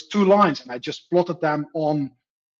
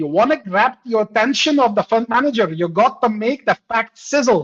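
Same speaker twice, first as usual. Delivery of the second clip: put-on broad, thick Scottish accent, pitched up; 6 semitones higher, 4 dB louder than usual. Retelling a sales trainer's words: thick scottish accent. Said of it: "in a fat Scottish accent".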